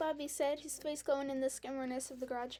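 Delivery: ordinary delivery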